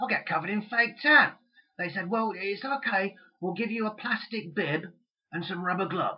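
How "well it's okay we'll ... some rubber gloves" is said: put-on soft, hoarse, raspy, weird Cockney accent. A speaker retells what they were told, in a weird cockney accent. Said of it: "They said it in a sort of weird Cockney accent".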